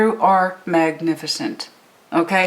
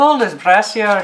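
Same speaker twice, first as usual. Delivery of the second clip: bad, fake put-on Irish accent; 3 dB louder than usual. During a tarot reading, quoting a saying from Ireland, bad Irish accent. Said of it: "My accent is crap".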